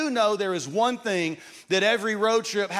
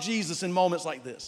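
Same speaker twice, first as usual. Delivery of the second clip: ordinary delivery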